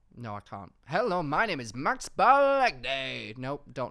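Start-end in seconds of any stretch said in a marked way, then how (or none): 0.8-3.3 very loud, slow, booming TV voiceover announcer voice. Asked for your best impression of the Love Island voiceover guy, try an attempted Iain Stirling impression. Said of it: "Can you do your best Ian Sterling impression".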